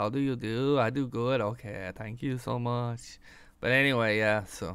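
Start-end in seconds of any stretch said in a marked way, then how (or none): 0.0-3.2 quieter, slower, put-on Mexican Chinese accent. Showing off one of many accents for an audience, mock Chinese-Mexican accent. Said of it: "my Mexican Chinese migrant that came over the border".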